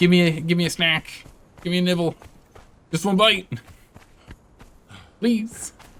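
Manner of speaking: high-pitched, begging, pleading hyena voice. Voicing the hyena on their tail that smells the meat: voicing a begging hyena. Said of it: "He's like".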